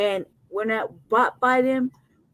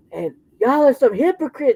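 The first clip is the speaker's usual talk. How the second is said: full, resounding, booming, big-voiced; 3 semitones higher, 4 dB louder than usual. Retelling Jesse speaking on the mic in church: imitating Jesse's booming bass voice. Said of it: "his voice was like".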